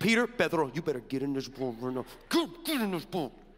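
put-on voice spoken through teeth. Retelling Jesus ordering Peter into the boat like a mama talking through her teeth. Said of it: "your mama talk through her teeth".

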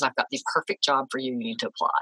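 normal talking voice

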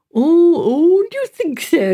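very slow, high, drawn-out, eagerly pleased. Joanna answers the warning that Owen Griffiths could be dangerous: demanding with pleasure. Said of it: "Demanded Joanna, with every symptom of pleasure".

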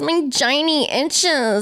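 put-on sexy voice. In a skit with a would-be hookup partner, speaking in a porn voice. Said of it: "This is my porn voice".

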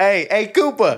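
put-on New York accent. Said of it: "we had a New York accent pretty dialed".

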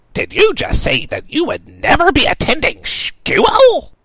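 very high, very loud monstrous shrill screech. A narrator reads the monstrosity of darkness confronting him, shrieking monster voice. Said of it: "The monstrosity of darkness which had followed him for so long, ... "I'm the Lady of Terror! ... shrieked at him. ... [name] shrieked".

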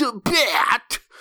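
high carnival barker voice, barked out. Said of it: "[name] is making fun of a carnival barker".

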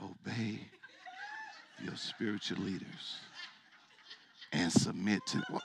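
mock hushed whisper. Imitating how the listeners said the verse, imitating a whispered verse. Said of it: "Why are you whispering this verse?".

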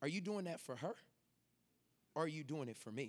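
low, soft, hushed half-whisper. Retelling an inner voice half-whispering a question to them, as a half-whisper. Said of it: "the Holy Spirit whispers to me".

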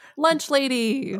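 high voice breaking a little, cracking. Announcing the last one they're talking about today, voice cracking a little. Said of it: "My voice cracked a little bit".

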